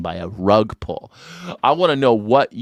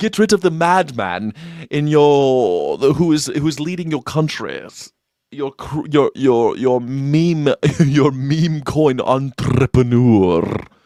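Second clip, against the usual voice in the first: put-on British royal voice, higher pitched; 3 semitones higher than usual. Addressing Congress as King Charles: King Charles impersonation. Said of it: "That's my impersonation of King Charles".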